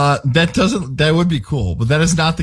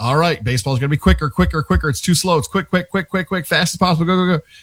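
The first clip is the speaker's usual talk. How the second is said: put-on urgent voice, hurried and rushed. Retelling how ESPN people pushed baseball to go faster: imitating ESPN people urging speed. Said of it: "the people at E S P N were like".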